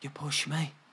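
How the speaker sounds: faint, hushed half-whisper without breathiness. Retelling first waking up and speaking to the brother: retelling a half-whisper.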